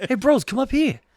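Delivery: very high-pitched calling out. Voicing a movie character's lines as Mark Wahlberg: Mark Wahlberg impression. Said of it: "I will be doing as Mark Wahlberg".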